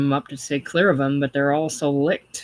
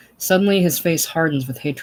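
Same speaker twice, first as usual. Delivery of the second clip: plain reading voice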